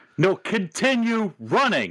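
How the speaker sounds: high, swooping put-on yell. Playing a character who yells at another character: yelling in character. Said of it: "I'm gonna yell at him".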